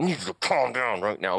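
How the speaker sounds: mock speech through gritted, clenched teeth. Retelling a struggle getting his socks and boots on, imitating gritted-teeth talk. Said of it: "talk through your teeth".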